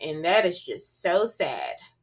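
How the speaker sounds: ordinary talk, nothing marked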